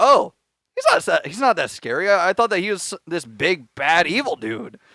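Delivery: ordinary delivery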